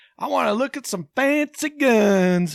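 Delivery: high, loud southern drawl, last word stretched. Retelling the first words of a man who came in, imitating a loud southern drawl. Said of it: "He's got this southern draw to it".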